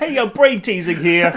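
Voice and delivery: loud, played-up, put-on New York street accent. Mimicking a game contestant described as a New Yorker, in a mock New York accent. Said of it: "Because he's New Yorkian, he talks all like that".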